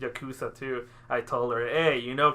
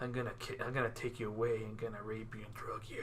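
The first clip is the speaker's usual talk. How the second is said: mock manly voice, much lower, quieter; 3 semitones lower, 15 dB quieter than usual. Describing a Yakuza character from a show, imitating his manly voice. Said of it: "just imagine with his manly voice".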